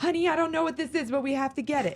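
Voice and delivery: mock high holler, as if calling far off. Retelling a woman who tried a dance game, imitating her hollering across the store. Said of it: "she was like hollering across the store".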